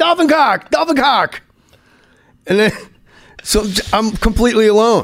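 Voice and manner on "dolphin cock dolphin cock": hollered, pitched-up yell, said twice. Telling the story of floating there, the speaker re-enacts his yelling. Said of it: "I start yelling".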